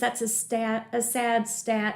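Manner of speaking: usual speaking voice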